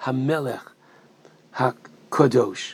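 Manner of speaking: pause placed at Hamelech HaKadosh.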